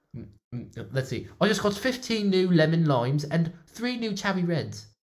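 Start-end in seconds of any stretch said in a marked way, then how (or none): 1.4-4.8 put-on high-pitched British accent. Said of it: "boss, your voice!".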